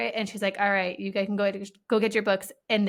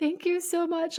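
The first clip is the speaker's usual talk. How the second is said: put-on tearful crying, way up high; 9 semitones higher than usual. Retelling kids coming up to say thanks: imitating crying kids. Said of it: "like, crying".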